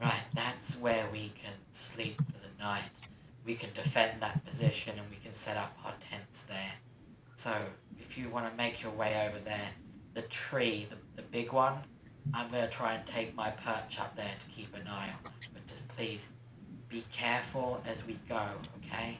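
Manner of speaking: low, hushed, very quiet voice. A game character addresses the whole party, in a hushed tone. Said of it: "will say to you all in a hushed tone".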